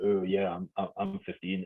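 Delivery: fake deep voice, low and soft. Recalling a dad sneaking the speaker into a cinema: put-on deep voice. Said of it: "pretending I'm a deep voice".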